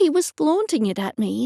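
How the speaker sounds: ordinary delivery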